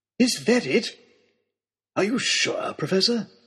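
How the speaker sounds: gasping in amazement. Looking through the professor's telescope, he questions the professor, gasping in amazement. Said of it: "I heard him gasp".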